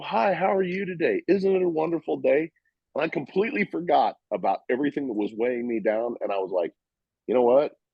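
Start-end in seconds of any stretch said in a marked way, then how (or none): 0.0-2.5 upbeat, high-pitched cashier voice. Retelling how the woman at the register greeted them, imitating a soft, high-pitched voice. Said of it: "really soft, high pitched voice".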